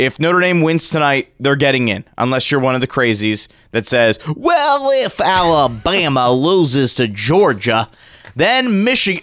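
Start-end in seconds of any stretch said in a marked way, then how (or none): 4.3-9.2 drawling, swooping, rough put-on Southern accent, slow. Imitating the crazies who argue Notre Dame might miss out: imitating a Southern accent. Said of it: "I'm doing a Southern accent".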